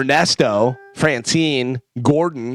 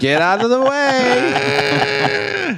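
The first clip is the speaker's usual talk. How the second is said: put-on very high, drawn-out, swooping old man yell; 11 semitones higher than usual.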